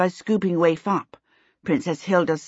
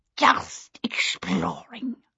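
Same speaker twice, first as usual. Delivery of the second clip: small, crackling whisper; 4 dB quieter than usual. Narrator reads the fire demon answering the king: Calcifer's small crackling voice. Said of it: "in his small, crackling voice".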